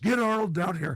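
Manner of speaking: high-pitched yelling. Retelling a director calling for an actor to come down: imitating James Cameron yelling. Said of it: "And he yells".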